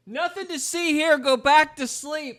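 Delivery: creepy, loud, high voice.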